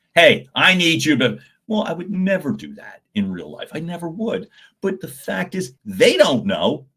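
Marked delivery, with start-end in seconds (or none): 0.1-1.4 loud, bossy, commanding announcer-style voice. Showing how an announcer voice can sound like giving orders, bossy tone. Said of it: "like I'm telling somebody what to do".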